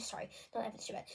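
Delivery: quick whispered aside.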